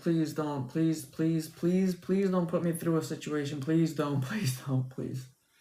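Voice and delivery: mock frightened, desperate, repeated, scared tone. Retelling hearing a car in the driveway: retelling own scared pleading. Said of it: "And I got really scared".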